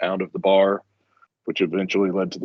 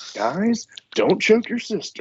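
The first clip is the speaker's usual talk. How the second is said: voice pitched way up high; 14 semitones higher than usual. Retelling a neighbor's overheard remark to the kids, imitating a high-pitched tone. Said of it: "just in real high pitched tone".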